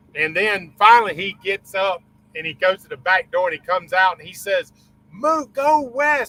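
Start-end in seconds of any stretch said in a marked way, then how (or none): 5.2-6.3 put-on yelling, higher pitch. Retelling how the pilot warned him to move: imitating someone yelling. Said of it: "He's yelling it".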